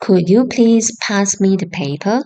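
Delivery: ordinary delivery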